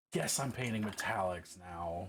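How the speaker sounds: resigned, giving-up tone, accepting. Repeating the other speaker's words back, imitating a resigned tone. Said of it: "You sound so resigned".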